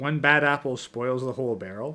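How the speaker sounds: plain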